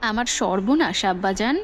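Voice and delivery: ordinary talk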